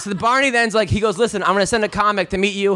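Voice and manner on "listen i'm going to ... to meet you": ordinary delivery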